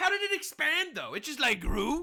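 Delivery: high, put-on, mock sarcastic voice. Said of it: "I'm being too sarcastic".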